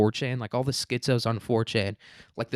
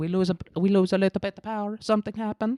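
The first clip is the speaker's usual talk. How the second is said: botched fake Italian accent, very high pitch; 9 semitones higher than usual. Mocking how people in Spain react to losing power, in a bad Italian accent. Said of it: "so I'm gonna do an Italian".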